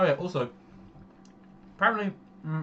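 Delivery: slightly high, speaking with mouth full. Chatting in a group conversation, talking with a mouthful. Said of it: "sorry, mouthful".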